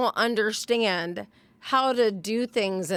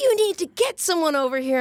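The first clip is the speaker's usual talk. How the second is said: mock screaming, higher pitch; 7 semitones higher, 4 dB louder than usual. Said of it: "And she's screaming at me".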